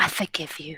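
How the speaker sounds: whispering. Speaking in character to a venomous pet while petting it: whispering. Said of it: "And just whisper".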